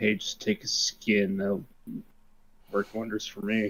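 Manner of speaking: very quiet whispered aside in a character voice. Nudging another character with an elbow and speaking in character: whispering in character. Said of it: "I whisper".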